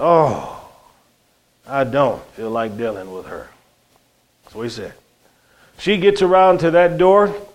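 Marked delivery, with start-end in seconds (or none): 0.0-3.5 acted, heavy, low, soft weary sighing mutter. Retelling a friend at work who saw a woman running toward them, retelling a sighed reply. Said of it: "he bowed his head and sighed and said".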